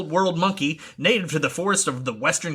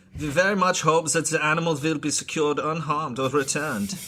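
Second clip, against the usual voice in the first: reading with German accent. Reading a statement aloud in a put-on German accent. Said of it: "I'm just doing German".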